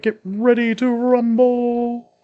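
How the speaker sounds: very slow, high wrestling-announcer hype, drawn-out rumble. Recalling the guy who would announce wrestling, imitate him in a wrestling announcer voice. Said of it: "the guy that would um, announce wrestling".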